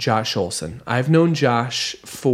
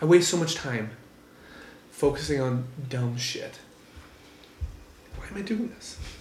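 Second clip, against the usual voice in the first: tearful, crying while talking, quieter; 9 dB quieter than usual. Talking about glimpses of what really matters, crying while talking. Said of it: "I'm crying because of these moments".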